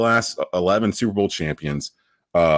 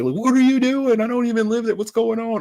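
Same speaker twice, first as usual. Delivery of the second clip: shrill, very high-pitched screaming. Recounting a weather report cutting into the Panthers game, retelling own screaming. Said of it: "and I start screaming".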